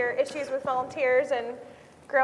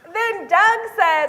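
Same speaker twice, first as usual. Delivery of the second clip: plain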